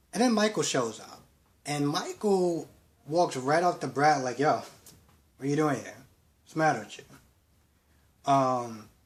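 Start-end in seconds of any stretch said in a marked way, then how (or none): none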